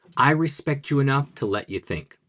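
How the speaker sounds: plain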